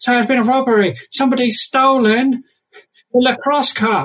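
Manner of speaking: put-on tiny, very high little-kid voice. In a tabletop game, a little kid caught out of his common room answers, in a small child's voice. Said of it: "That's the little kid's like".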